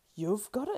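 gasping voice. Frodo answers Sam, gasped. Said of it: "gasped Frodo".

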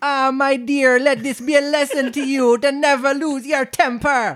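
very high-pitched put-on Jamaican accent, crab voice. Reading a story aloud, the old crab speaks to her daughter, jamaican accent. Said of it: "We'll just do a little Jamaican crab family".

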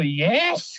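cross, angry "yes" with a challenging questioning tone. Retelling a player who looked at him angrily and asked: imitating Carragher asking angrily. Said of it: "ele me olhou assim, bravo".

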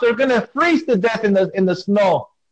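high, carrying call across a distance.

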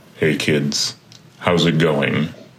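low TV crime-show announcer voice. Retelling how he greeted growling kids, switching to a Law & Order announcer voice. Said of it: "I switch to my best Law and Order announcer voice".

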